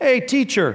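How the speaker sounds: flattering, high-pitched tone.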